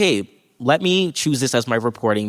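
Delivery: ordinary delivery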